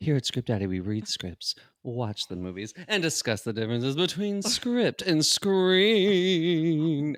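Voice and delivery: playful spooky host voice, "screen" drawn out. Introducing what the show does: put-on spooky inflection. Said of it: "I added a little bit of a spooky inflection there".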